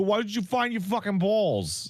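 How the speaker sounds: put-on big Italian guy voice, very high-pitched, yelling. Imitating how the game talks to you: imitating a big fat Italian guy. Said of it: "a big fat Italian guy telling you".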